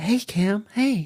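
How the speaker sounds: mock impish teasing. Describing voices heard during a breathing session, imitating a mischievous voice. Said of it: "kind of like mischievous".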